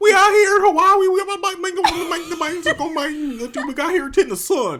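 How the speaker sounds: very high, twangy, stretched southern ramble. Imitating the other speaker in an old video: imitating southern twang like Boomhauer. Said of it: "you sounded like a banjo".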